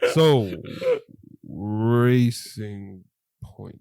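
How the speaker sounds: very slow, drawn-out delivery, every word dragged. Discussing a race weekend, saying a team's name very slowly. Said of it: "I say it very slowly".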